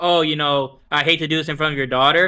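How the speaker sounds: plain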